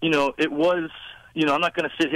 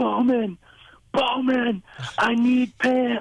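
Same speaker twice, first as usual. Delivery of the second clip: put-on loud scream, pitched higher; 9 semitones higher than usual. Retelling a mishap on stage, calling out to Bowman: retelling a loud scream. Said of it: "I'm screaming so loud".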